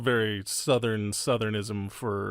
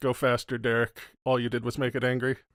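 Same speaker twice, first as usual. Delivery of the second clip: normal talking voice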